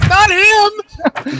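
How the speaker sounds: very high-pitched, sudden shout. Declaring what the character does on their turn: yelling. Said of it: "I'm just gonna yell".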